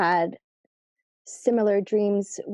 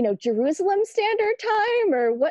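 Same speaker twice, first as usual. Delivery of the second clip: much higher, cheeky, mocking teasing tone. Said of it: "give him a hard time".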